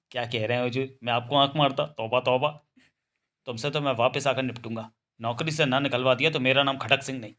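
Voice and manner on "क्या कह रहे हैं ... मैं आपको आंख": usual speaking voice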